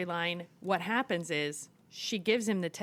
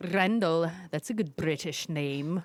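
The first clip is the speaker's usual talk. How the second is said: put-on imitated Scottish accent; 3 semitones lower than usual. Retelling what a man said to a woman, in a Scottish accent. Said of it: "a fucking Scottish accent".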